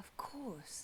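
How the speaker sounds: soft whispered sigh, said as an aside.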